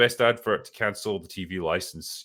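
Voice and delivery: ordinary talk, nothing marked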